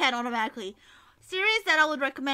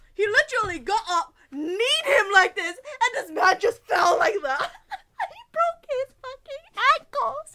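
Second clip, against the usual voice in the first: high-pitched, talking through helpless laughter; 9 semitones higher, 3 dB louder than usual. Describing a scene from the series he watched, laughing while talking. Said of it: "I'm sorry, I can't stop laughing".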